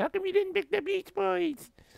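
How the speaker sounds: put-on tearful, pleading, very high crying whine. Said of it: "He's gonna be crying, going".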